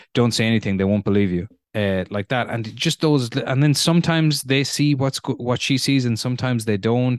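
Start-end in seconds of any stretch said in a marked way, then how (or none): 0.2-1.5 fast, flat, matter-of-fact deadpan. Acting out what a woman says to herself in her mind: mock-deadpan inner voice. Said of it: "not in a panicked way, but in the sort of deadpan tone that people actually speak to themselves with".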